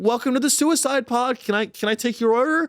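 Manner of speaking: high, chirpy, peppy customer-service cheer. Imitating a pod worker greeting a customer: imitating a peppy worker.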